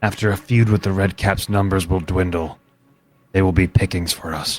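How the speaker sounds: whispering. Speaking in character during a tabletop game, whispering. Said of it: "You laughed mid whisper".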